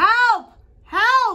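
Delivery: shrill, very high, very loud yell. Calling for a helper to come do art: yelling for help. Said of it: "You yelled to have art done?".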